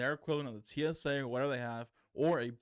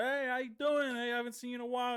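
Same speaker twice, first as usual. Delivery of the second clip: boisterous, loud, very high-pitched voice; 12 semitones higher than usual. Retelling how people greet you in a texas store: imitating a loud greeting. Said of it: "just loud".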